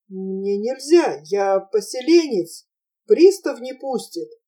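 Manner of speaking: plain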